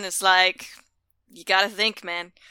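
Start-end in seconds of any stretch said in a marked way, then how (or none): 1.3-2.2 mock deadpan delivery, quieter. Acting out a Sphinx answering people who yell at it: put-on deadpan Sphinx reply. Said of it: "they're just completely deadpan".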